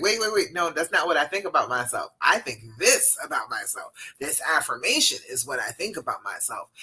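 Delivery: ordinary delivery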